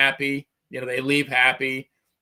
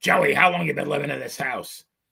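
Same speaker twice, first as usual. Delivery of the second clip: rough, raspy chain-smoker's voice. Recalling a woman at a barbecue questioning the speaker's dad, in Marge Simpson's sister voice. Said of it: "the Marge Simpson sister voice".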